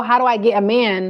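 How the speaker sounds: usual speaking voice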